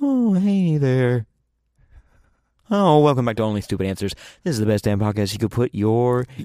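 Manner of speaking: haunting, spooky ghost voice. Opening the podcast with a joking intro line: ghostly voice. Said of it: "it's ghostly".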